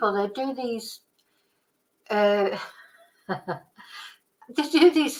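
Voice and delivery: talking while breaking into laughter through the words. Speaker reacting to a news report and a comment, laughing while talking. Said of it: "I'm laughing because of Charlie's comment".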